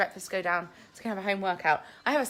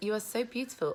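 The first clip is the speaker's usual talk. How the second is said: ordinary delivery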